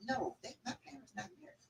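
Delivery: imitated hushed whisper. Retelling someone's answer about his parents not being married, retelling a whisper. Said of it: "why you whispering like we don't know".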